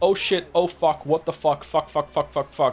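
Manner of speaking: mock panicked, swearing outburst. Joking about what people in their thirties call middle age: imitating a panicked swearing outburst. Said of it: "as the thirties is like to call them".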